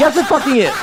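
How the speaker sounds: exasperated, angry, frustrated snap, boiling over. Ranting about a game's offline mode, answering own call to calm down: frustrated, angry. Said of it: "I got a little frustrated. Got a little angry".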